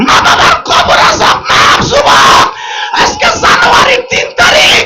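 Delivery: high, loud fervent preaching shout, projected.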